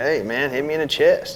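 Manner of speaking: usual speaking voice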